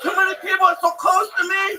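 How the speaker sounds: fake, exaggerated anxious and distressed pleading tone. Asking a pretend security guy for better seats, putting on distress. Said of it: "pretend like I'm a security guy".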